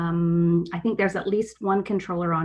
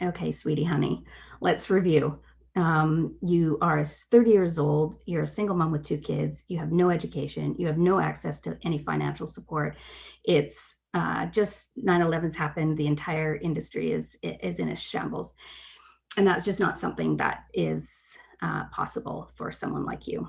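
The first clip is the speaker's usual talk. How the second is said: ordinary delivery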